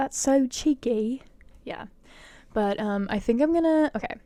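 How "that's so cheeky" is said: put-on boyish little British boy accent. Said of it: "I sound like a little, a little British boy".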